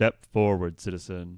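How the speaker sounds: very loud, heavy, echoing, booming metallic voice. Voicing a helmeted figure calling out to a player: booming metallic echoing voice. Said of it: "In like a in like a booming, like heavy metallic voice that like echoes".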